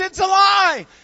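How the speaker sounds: high, loud excited shout. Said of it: "he's all excited".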